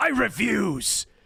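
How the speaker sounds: rough high anime villain. Retelling a scene where Vegeta resists mind control, the speaker does a Vegeta impression. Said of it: "I feel like that was a pretty good impression".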